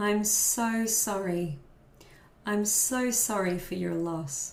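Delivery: heartfelt, empathetic, slow, sympathetic voice. Showing how you apologize to someone with lots of empathy: empathetic apologetic tone. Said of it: "showing someone a lot of empathy and you're apologizing".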